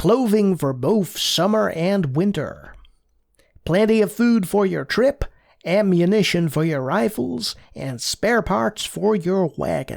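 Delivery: fake, put-on American accent. Playing Oregon Trail aloud, reading the game's lines in a put-on American accent. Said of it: "I'm going to keep doing it".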